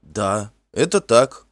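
astonished. The youth answers the poet who named him Finn, surprised. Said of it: "удивленно ответил юноша".

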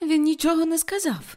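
sudden, very high exclaimed cry. A daughter, embraced by her mother, exclaims. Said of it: "вигукнула Рут".

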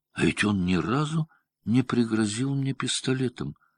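sudden astonished tone. Belinda stops listing what she should have done and realizes something: surprised. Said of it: "сказала с удивлением".

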